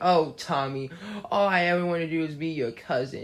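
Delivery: put-on pretend sobbing in a high voice. Retelling a cartoon scene, imitating Angelica pleading: Angelica fake crying. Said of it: "Angelica does all that fake crying stuff".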